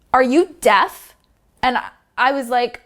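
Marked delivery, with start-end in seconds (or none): 0.1-1.1 put-on acted gruff old man voice. Retelling how an old man rudely asked a question: imitating a rude old man. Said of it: "And he said it like that".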